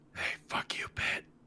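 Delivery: whispered softly under the breath. Looking down into a pit in character: whispering. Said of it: "And I whisper to myself".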